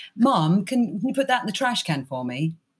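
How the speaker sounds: put-on slight English accent. A mother quotes her son asking her for something in a little English accent. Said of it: "in a little English accent".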